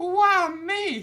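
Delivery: very high, loud, overdone voice. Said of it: "She doesn't sound like that".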